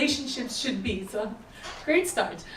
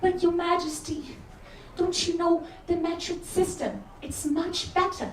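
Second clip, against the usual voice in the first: put-on awful English accent, pitched up; 5 semitones higher than usual. Acting out a peasant speaking to the king: awful English accent. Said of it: "that accent was awful".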